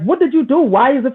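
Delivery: mock angry, accusing voice. Retelling what he asked a man whose marriage was failing, retelling an angry question. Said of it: "with an angry voice".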